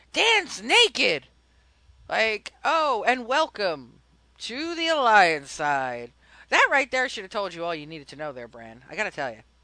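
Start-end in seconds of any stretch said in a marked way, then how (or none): 0.2-1.3 mock, loud, high yell shouted across the room. Retelling what someone yelled at her after whispering it, retelling a yell. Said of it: "turned around and yelled it".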